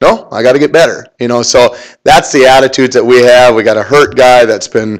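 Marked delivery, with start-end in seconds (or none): none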